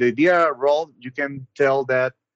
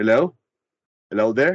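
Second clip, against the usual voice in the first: put-on heavy, thick, strong British accent; 2 semitones lower than usual. Acting out a phone call, the caller answers: strong British accent. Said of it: "In a strong British accent".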